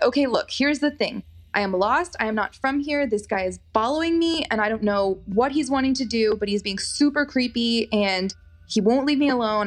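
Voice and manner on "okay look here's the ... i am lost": usual speaking voice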